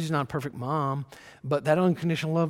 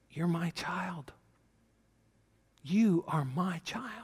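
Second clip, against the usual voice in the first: put-on whisper, quieter; 2 semitones higher, 5 dB quieter than usual. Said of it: "I think He wants to whisper".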